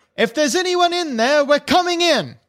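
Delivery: high-pitched yell. Voicing a character who pounds hard on a door: yelling. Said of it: "and then yells".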